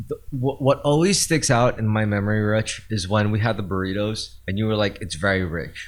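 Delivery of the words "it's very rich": mock underwhelmed, disappointed, let-down tone. Retelling what the other speaker said about the burritos: imitating Richie sounding disappointed. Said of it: "but you said it in a di-, in a disappointed way".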